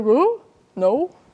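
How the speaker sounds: dismissive, offhand, brushing-off typical guy voice. Imagining how a man would answer if asked, doing an impression of all men. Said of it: "that's my impression for all men".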